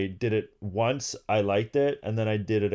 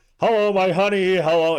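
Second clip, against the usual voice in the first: hammed-up dumb voice, very high and loud; 10 semitones higher, 9 dB louder than usual. Retelling how dad went on stage acting dumb: imitating dad acting dumb. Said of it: "acting, like, dumb".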